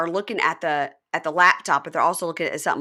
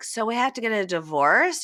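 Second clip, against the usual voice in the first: put-on slurred speech, higher pitch; 5 semitones higher than usual. Retelling a scene from a TV show: imitating slurred speech. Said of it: "she's slurring and she's like".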